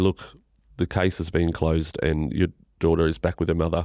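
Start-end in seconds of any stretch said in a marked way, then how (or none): none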